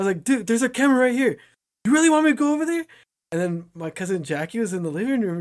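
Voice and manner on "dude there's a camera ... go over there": sharp, loud, high-pitched scolding yell. Retelling yelling at a neighbor kid who punched the snowman: retelling own yelling. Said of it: "why are you yelling at him?".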